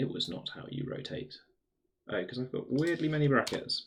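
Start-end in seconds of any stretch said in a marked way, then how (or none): 0.0-1.3 whispered, hushed, breathy, dramatic narrator voice. Working out how to rotate something, switching into a narrator voice. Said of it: "Narrator voice".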